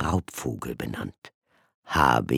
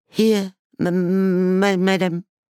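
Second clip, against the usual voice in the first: choked out, very high and loud; 7 dB louder than usual. Threatened with the cane, an orphan answers, forced out past lump in throat. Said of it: "die Worte an dem Stein in seiner Kehle vorbeizupressen".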